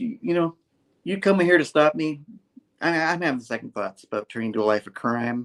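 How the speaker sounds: plain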